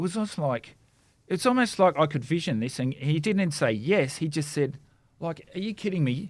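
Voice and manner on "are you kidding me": mock high voice with a lot of attitude. Acting out the healed man's reply to Jesus: imitating someone with attitude. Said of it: "with an attitude".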